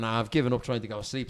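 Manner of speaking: ordinary talk, nothing marked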